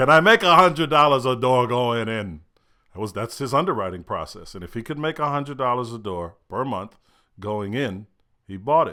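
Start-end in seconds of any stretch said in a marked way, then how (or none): 0.0-2.4 bad New York accent, raised voice.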